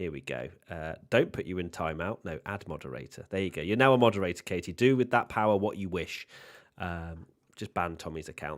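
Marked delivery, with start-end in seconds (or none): none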